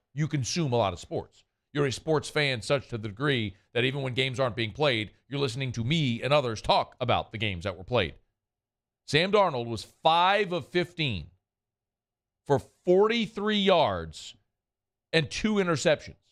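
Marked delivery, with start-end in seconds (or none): 9.1-16.1 slow, deliberate, drawn out, slightly pitched up. A sports radio host repeats a quarterback's stat line to listeners, said again slowly. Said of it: "Let me say that again slowly".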